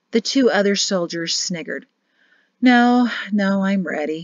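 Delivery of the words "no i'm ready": worn-out, tired, weary tone. Shem answers a private's taunting question while other soldiers snigger, weary. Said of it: "Shem said wearily".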